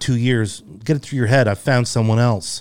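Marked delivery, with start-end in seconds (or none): none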